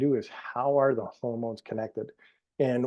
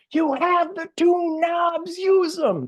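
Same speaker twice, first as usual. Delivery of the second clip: very high-pitched, slow, stretched-out screaming yell; 4 dB louder than usual. Retelling a doctor screaming at a big audience: imitating Christiane Northrup screaming. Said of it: "and she's screaming".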